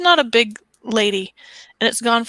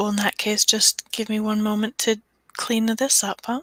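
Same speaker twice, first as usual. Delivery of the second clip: slightly pulled-in, softer, lowered voice; 5 dB quieter than usual. A storyteller voices a woman stepping closer to someone, a little bit quieter. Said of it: "Her voice gets a little bit quieter".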